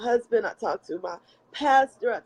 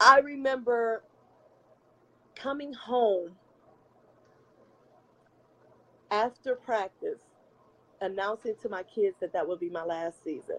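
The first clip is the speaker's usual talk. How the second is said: strained composure, talking through held-back tears. Recalling announcing to the kids that it would be the last season, holding back tears. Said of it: "I'm trying not to get emotional".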